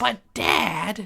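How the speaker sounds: very high, creaky, raspy cartoon voice. Doing a favourite bit when asked: Lisa Simpson voice. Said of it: "That's kinda like Marge, but Lisa".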